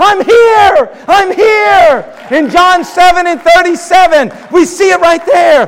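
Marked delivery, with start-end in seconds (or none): 0.0-2.2 very slow shout with each here drawn out. Retelling how Jesus answered the people at the feast: imitating a shout. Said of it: "he shouts out".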